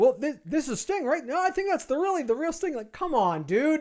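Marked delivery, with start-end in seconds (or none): 0.0-2.7 confused, puzzled commentator voice, pitched up. Retelling a match, mocking the commentators: imitating confused wrestling commentators. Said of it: "commentary cannot tell the difference".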